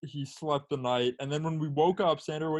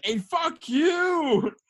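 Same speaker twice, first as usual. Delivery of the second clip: very high, shrill, loud scream with drawn-out "you"; 14 semitones higher, 6 dB louder than usual. Telling how a man opened the car window at a cop: retelling a scream at a cop. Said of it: "opens the window and like screams at the cop".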